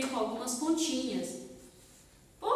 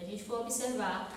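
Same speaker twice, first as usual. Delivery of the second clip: ordinary talk, nothing marked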